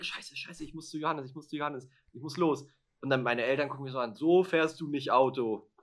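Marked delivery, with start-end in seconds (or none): 0.0-2.7 put-on panicked voice. Recounting the moment she had to leave urgently, re-enacting her own panic. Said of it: "in Panik".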